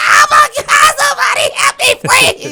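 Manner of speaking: very high, loud, frantic, panicked pleading holler. Telling how two deer ran by the gas station, retelling a holler. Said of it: "I hollered".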